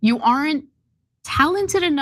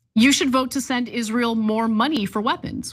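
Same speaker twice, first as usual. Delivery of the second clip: ordinary delivery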